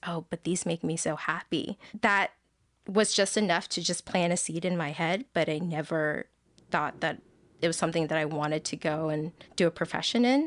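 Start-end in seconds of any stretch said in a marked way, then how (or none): 0.1-1.8 whispered voice. Recalling a class review, the speaker quotes a girl in the class, retelling a whisper. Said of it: "just kind of whispered to me and goes".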